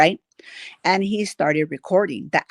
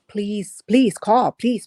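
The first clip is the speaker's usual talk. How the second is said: urgent, desperate, repeated begging plea; 4 semitones higher, 3 dB louder than usual. Retelling how a passenger begged officers to call: imitating someone begging. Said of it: "begging them".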